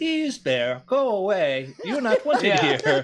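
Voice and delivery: put-on polite Japanese woman voice. Imagining what a robot's megaphone says to bears: very polite japanese woman voice. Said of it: "like a very polite Japanese woman go".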